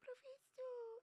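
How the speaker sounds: very high-pitched, cat-like meowing voice. Retelling how she spoke in class: imitating own old meowing voice. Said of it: "eu falava desse jeito mesmo".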